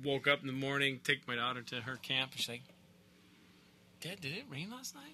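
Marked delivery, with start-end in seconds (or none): 4.0-5.2 imitated voice full of awe. Retelling the daughter's question after overnight rain: imitating daughter's awed voice. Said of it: "like a note of awe in her voice".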